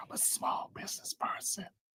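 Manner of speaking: hushed, very quiet, barely audible whisper. Joking about being a small business person, very quiet whisper. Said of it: "Why are you speaking so low? Because I got to whisper it".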